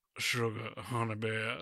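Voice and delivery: mock deep sultry voice. Acting out a guessing-game clue on the spot: put-on deep sultry voice. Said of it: "deep, sultry voice".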